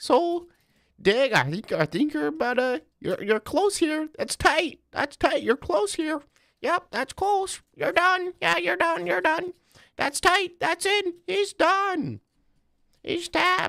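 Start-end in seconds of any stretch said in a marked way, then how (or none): 1.3-13.7 very high fight-announcer play-by-play commentary. Speaker shows how Lauren Murphy would announce it like a fight: Lauren Murphy impression. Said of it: "my impression of Lauren Murphy edging you while she announces it like a fight".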